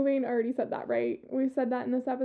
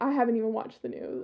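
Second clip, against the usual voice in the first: mock distraught, dismayed, disdainful voice; 2 semitones lower than usual. Retelling a dad's reply on hearing who won: imitating dad's distraught disdain. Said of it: "the utter distraught and disdain in my dad's voice".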